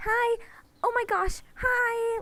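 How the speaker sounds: very high, slow, cutesy cooing voice. Showing how a character might sound in a headcanon: cute Waves voice. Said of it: "Waves would sound sort of something like".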